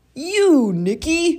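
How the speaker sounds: very high, very loud, gleeful roar. Narrator reading a children's story, voicing an uncle arriving with a present: roared happily. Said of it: "roared Uncle Everton happily".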